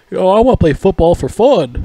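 dopey, goofy delivery, high-pitched and loud. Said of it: "he keeps, like, smiling and shit".

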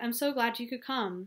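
plain reading voice

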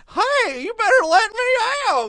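very high, very loud yell. Imagining that kid locked in an institution: Don Knotts voice. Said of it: "It's just my voice".

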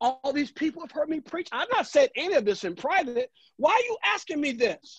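high indignant voice.

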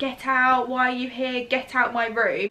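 put-on anger, half shouted, mild angry yell. Retelling waking up to see a woman in the room: imitating her own shouting. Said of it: "I would start shouting".

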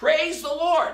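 put-on very high screaming shout. Telling a joke, voicing the elderly lady on her porch, retelling a scream. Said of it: "scream out at times".

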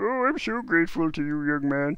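high cartoon character voice. Narrating a story, voicing the beggar's line in the Lorax voice. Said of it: "I'm slipping back into my Lorax voice".

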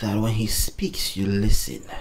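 bad put-on low, slow, husky whisper. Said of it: "that's a terrible impression".

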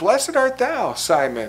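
encouraged, approving tone with swooping inflection. Imagining Jesus answering Simon, voiced as Jesus, acting encouraged. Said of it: "I can imagine just an encouraged inflection in Jesus' voice".

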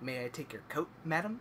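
soft, hushed, almost under the breath. Quoting a game character's awful sound bites: imitating Jack Marston. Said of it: "he's like".

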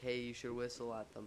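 usual speaking voice

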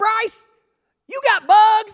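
shrill, booming, high-pitched, drawn-out holler. Retelling the class clown yelling at a classmate: imitating Terry's high-pitched yell. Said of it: "he yells out".

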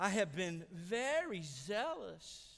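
mock whiniest voice, high, very slow, drawn-out. Retelling what Elijah said in verse 10: whiny Elijah voice. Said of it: "in the whiniest voice you can imagine".

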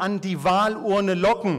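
"an die Wahlurne locken" firmly stressed, especially "Wahlurne locken".

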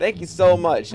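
fake gratitude, audibly annoyed, sarcastic tone. Thanking viewers for reaching a like goal he didn't want: sarcastic thanks. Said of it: "I'm being sarcastic".

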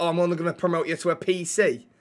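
ordinary talk

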